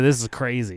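usual speaking voice

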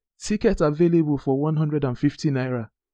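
loud calling out.

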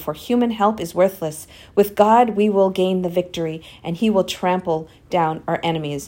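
usual speaking voice

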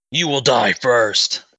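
enraged, furious shout. Voicing the captain who turns to face Darflon: captain shouting. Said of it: "She turns and faces Darflon and shouts".

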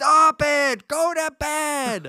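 very high, very slow, shrill, drawn-out scolding scream. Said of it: "screaming at him".

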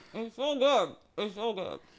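talking through a mouthful. Talking to listeners while eating a cookie: chewing while talking. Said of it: "I'm sorry if you guys have to hear me chew".

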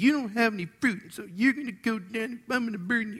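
put-on very high, petty, kid-like childish voice. Showing how a wrong reading can make Jesus sound: childish-sounding Jesus, put on. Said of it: "it may sound a little childish".

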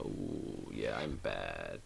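put-on sly villain voice. Describing the other, more slyly evil guy by imitating him: mock slyly evil voice. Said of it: "he's more slyly evil".

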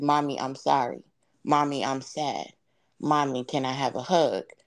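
ordinary delivery

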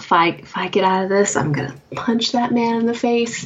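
grumbled, mumbled aside. In a tabletop game, Lori mutters to herself, muttering to herself. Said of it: "Lori mutters to herself".

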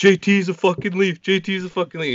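acted-out screaming with excitement, very high, frantic. Retelling how a friend screamed the news over the phone: imitating someone screaming.

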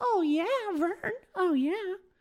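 very high, little cartoon mouse voice. Playing along in a role-play bit with another speaker, doing a Mickey Mouse voice. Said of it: "I was trying to sound like Mickey Mouse".

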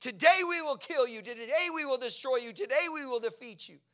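loud, high-pitched battle scream. Retelling how an army screamed at its enemy: imitating soldiers screaming. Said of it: "they're screaming".

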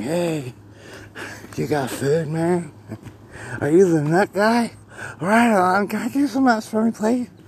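put-on high, very slow, sleepy-drunk squirrel drawl. Telling a story about a friendly squirrel on the fence, voicing it: drunk-sounding squirrel voice. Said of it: "it sounds drunk".

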